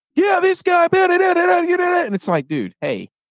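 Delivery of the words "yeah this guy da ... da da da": put-on very high, loud storm-reporter shouting voice. Imitating Brock Osweiler announcing a game: loud hurricane-reporter voice. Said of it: "sounds like he's out there in the middle of a hurricane".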